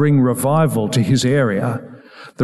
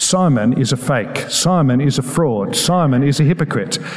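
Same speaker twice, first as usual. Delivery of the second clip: ordinary delivery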